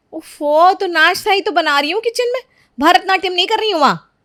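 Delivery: annoyed. Snapping back at her husband about breakfast: angry. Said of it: "इतना गुस्सा क्यों?".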